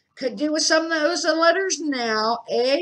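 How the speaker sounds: good-humoured. Uncle Vernon, after failing to light a fire with crisp packets, speaks cheerfully. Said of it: "he said cheerfully".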